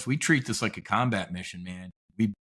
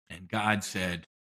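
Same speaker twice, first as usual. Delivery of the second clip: normal talking voice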